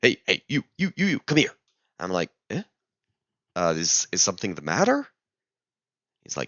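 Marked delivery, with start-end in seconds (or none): 0.0-1.5 high-pitched broken English. Retelling a security guy calling him over, imitating very broken English. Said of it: "in very broken English".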